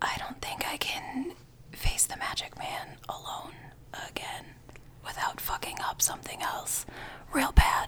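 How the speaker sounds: barely voiced, very soft, hushed confiding whisper. In a tabletop game, a player's character shrugs, walks up and whispers. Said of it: "I walk up and I whisper".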